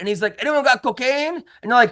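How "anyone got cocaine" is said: put-on heavy, thick Cuban accent, higher pitch. Telling a story about a man on stage, imitating Angel's thick Cuban accent. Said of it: "he has a very thick Cuban accent".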